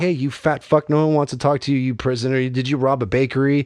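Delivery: play-acted, casual, unbothered, nonchalant, offhand tone. Retelling a clip of the roast master roasting prisoners: imitating Jeff Ross nonchalantly. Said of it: "so nonchalantly like".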